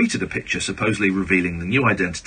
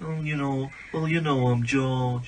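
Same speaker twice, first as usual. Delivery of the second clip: put-on musician voice, pitched higher, playful; 6 semitones higher, 5 dB quieter than usual. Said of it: "That's not bad".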